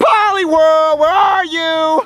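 shouting. Searching the forest for a Pokemon, yelling. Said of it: "so why are you yelling?".

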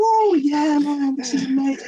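put-on excited American shout. Retelling a teammate shouting while walking out: imitating Anton shouting. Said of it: "Anton's just shouting".

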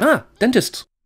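put-on high, loud British accent.

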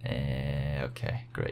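said sarcastically. Player struggling on the descent in a game reacts to the result, sarcastic. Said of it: "That was sarcastic".

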